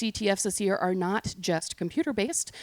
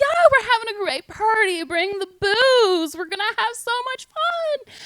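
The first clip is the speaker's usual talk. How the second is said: very high, loud fake British accent; 8 dB louder than usual. Retelling a phone call inviting friends to a party: fake British accent. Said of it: "puts on a fake British accent".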